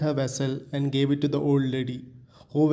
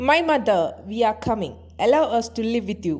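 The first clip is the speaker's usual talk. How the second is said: high, shrill, piercing voice; 8 semitones higher than usual. Narrating a legend, the deity speaks to the old lady: high piercing voice. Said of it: "With a high penetrate voice".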